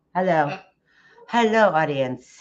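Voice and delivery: a distinct put-on puppet voice. Making the puppet greet the audience: Lamb Chop puppet voice. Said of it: "you say hi".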